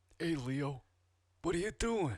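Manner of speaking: faint New York tinge, enunciated. Talking about movies, greeting Leo: Mark Ruffalo impression. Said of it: "I'm talking like he does".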